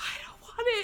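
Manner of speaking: whispering. Retelling her own reply while holding her cart, whispered. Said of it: "I literally whispered".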